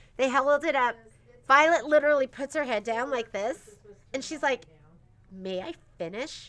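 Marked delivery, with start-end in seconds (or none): 5.3-6.5 put-on snippy, sassy teenage tone. Retelling how Violet interrupted with her head down, imitating a sassy teenager's tone. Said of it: "totally that tone".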